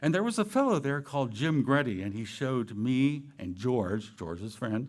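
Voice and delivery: plain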